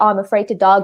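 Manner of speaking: ordinary talk, nothing marked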